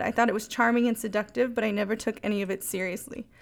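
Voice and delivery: ordinary talk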